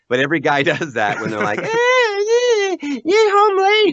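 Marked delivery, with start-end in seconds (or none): 1.6-3.9 shrill, very high, loud put-on stock wife voice. The speaker shows the voice every guy uses when imitating his wife: put-on stock wife voice. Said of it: "everybody breaks into the same voice".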